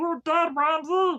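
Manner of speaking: put-on very high, loud, childlike voice. Retelling a movie scene where a character threatens Ramsey: kid voice. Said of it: "with this kid voice".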